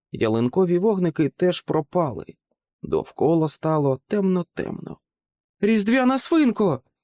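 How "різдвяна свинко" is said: very high, terrified, frightened yell. Narrator reads Jack calling out when everything goes dark, frightened yell. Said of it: "перелякано заволав Джек".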